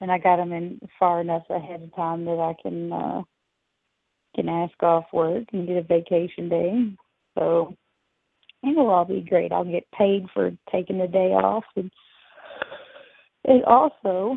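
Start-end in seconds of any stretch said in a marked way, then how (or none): 11.8-14.4 words stretched, spoken through a yawn. Talking about upcoming plans with a friend, yawning mid-sentence. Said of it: "pardon me for the yawn there".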